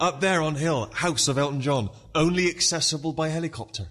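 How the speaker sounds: high-pitched broken English. Retelling a coach trip, the speaker imitates the guy's broken english accent. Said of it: "the guy went in his broken English".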